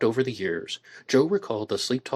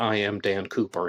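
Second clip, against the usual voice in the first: normal talking voice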